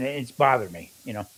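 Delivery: ordinary delivery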